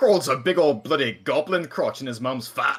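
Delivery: loud, high, puffed-up, defiant taunting tone. Voicing a character who puffs up his chest to hurl an insult: puffed-up defiant taunt. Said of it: "sort of puffs up his chest and sort of puts his hands on his hips and goes".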